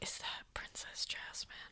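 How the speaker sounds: soft, awed little whisper.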